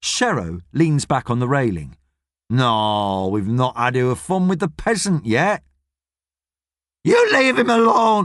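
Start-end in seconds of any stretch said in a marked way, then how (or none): 7.0-8.2 shrill voice. Gladys protesting at the boys, shrill. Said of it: "says Gladys shrilly".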